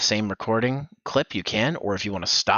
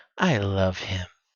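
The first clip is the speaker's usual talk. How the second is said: subtle, understated yandere voice; 3 semitones lower than usual. Directing a voice take, showing a softer version: more subtle yandere voice. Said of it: "I would make it more subtle".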